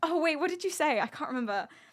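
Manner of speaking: needling, ribbing, mocking, teasing tone. Retelling how another person mocked a question: imitating someone mocking. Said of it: "he starts mocking me".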